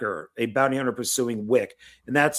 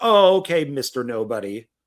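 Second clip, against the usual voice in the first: put-on sarcasm, much slower; 4 dB louder than usual. Retelling an actor's answer to someone calling himself Nobody, acting out a sarcastic reply. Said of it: "to be sarcastic".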